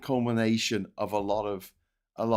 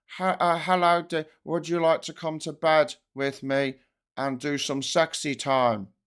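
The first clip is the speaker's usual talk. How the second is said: put-on sexy politician voice, slower; 5 semitones higher than usual. Showing that the politician's voice never changes whatever he feels, do a Keir Starmer sexy voice. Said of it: "So here's his sexy voice".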